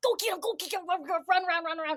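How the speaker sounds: high, excited, eager hype-up delivery.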